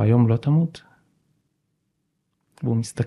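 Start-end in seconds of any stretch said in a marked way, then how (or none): 0.0-0.8 acted-out apprehensive tone, much slower. Retelling a question he asked someone he knew he could influence, retelling an apprehensive question. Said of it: "אני אומר לו כזה בחשש".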